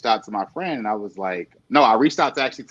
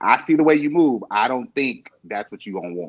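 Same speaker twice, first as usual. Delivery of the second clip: ordinary talk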